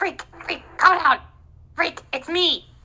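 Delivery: whispering goblin voice. Voicing a little goblin in the dark, calling to Freak: goblin whispering. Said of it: "this little goblin starts whispering".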